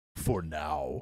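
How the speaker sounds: mock sinister, playfully ominous tone. Answering someone who says they own this place: mock ominous. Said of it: "that was ominous".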